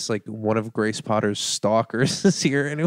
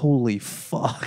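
put-on muttering under the breath, quiet. Retelling his reaction on seeing all the lights: imitating muttering under his breath. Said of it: "under his breath".

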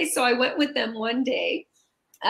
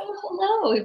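gentle, mild-mannered, pitched-up voice; 7 semitones higher than usual. Retelling first meeting Sensei Benny: retelling a soft-spoken hello. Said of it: "very soft spoken".

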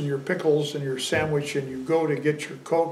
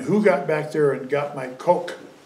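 normal talking voice

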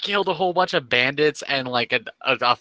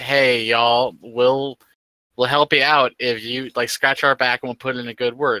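normal talking voice

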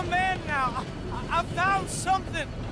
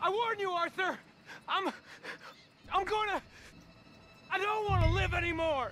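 agitated, upset, distraught, much quieter; 5 dB quieter than usual. A kid threatening Arthur Morgan, who tells him to calm down, agitated and distraught. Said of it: "Kid, just calm down".

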